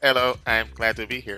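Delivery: put-on robotic voice. Mimicking another speaker's greeting: imitating a robot voice. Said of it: "Are you gonna talk like a robot the entire time?".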